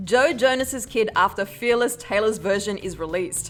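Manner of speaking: ordinary talk, nothing marked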